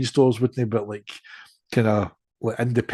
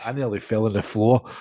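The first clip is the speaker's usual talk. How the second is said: ordinary talk, nothing marked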